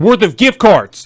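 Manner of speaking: high, loud, slow, outraged shout.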